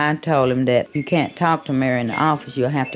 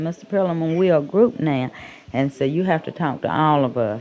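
normal talking voice

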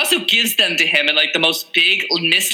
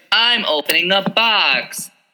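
stilted, very slow, bored, wooden monotone; 3 semitones higher than usual. Complaining about his acting, the speaker mocks his line in a stilted, wooden delivery. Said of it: "weird, stilted, wooden. I was like, are you trying to sound bored".

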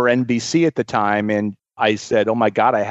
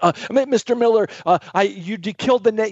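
play-acted, nervous, stuttering blather, very high; 10 semitones higher than usual. Retelling approaching a customer in one's restaurant, retelling own stammering and stuttering. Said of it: "in my best stammering and stuttering".

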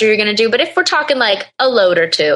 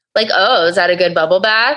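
put-on sarcastic voice, lower pitch; 3 semitones lower than usual. Complaining about John's attitude toward his wife, in a mock-sarcastic John impression. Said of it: "so sarcastic".

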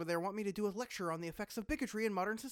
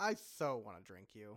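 sarcastic, voice dropped deep, low and hushed; 11 semitones lower, 5 dB quieter than usual. Answering a talking bottle of sarcasm that asks to be drunk, sarcastic. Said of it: "Now that was sarcasm".

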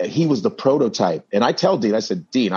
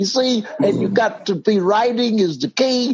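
very high-pitched put-on older comedian voice; 12 semitones higher than usual. Retell imitating Cosby in front of an audience, doing the Cosby impression. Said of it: "I'm imitating him in front of the audience".

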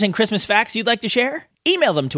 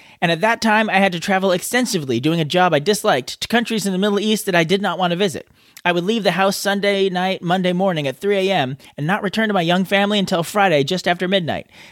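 usual speaking voice

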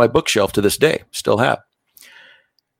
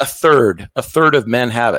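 ordinary delivery

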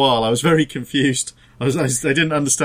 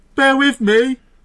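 loud, high, full-voice shout at the top of the lungs; 12 semitones higher, 5 dB louder than usual. Recalling shouting to everyone after saying goodbye, retelling a full-voice shout. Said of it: "at the top of my voice".

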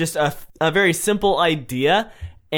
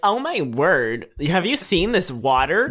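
bubbly put-on valley girl accent; 3 semitones higher than usual. Recalling the water commercial where they played valley girls: valley girl voice. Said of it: "Valley girl".

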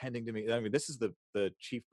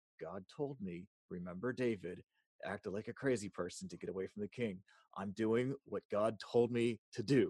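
close, confiding half-whisper; 3 dB quieter than usual. Retelling pulling someone down and half-whispering to him: retelling a half-whisper. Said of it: "I just pull him down and I whisper".

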